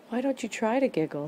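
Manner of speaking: gently hopeful, with lifted rising pitch. Reading a children's story aloud, voicing a character's line: hopeful. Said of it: "he said hopefully".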